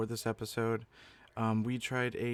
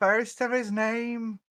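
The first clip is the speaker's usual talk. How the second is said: bad put-on Scottish accent, much higher; 11 semitones higher, 8 dB louder than usual. Podcast co-host introducing himself, in a bad Scottish accent. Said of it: "That was a bad Scottish accent".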